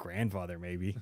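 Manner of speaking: muttering under breath. Retelling a scene from a new show, acting out a character's muttered aside. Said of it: "she's like under her breath".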